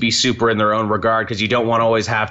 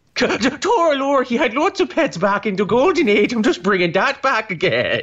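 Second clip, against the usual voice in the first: put-on Irish accent, higher pitched; 12 semitones higher than usual. Imitating Grant Morrison while discussing his Batman comics: Grant Morrison Irish accent. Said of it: "That is Irish".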